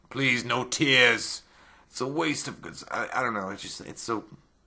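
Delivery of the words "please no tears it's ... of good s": dismissive, unmoved, offhand, superior delivery. Imitating a line from the movie scene just watched: dismissive Doug Bradley impression. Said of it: "'Cause he's so, like, dismissive. He's like".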